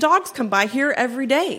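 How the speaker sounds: plain reading voice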